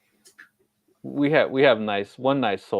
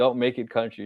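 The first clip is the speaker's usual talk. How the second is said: usual speaking voice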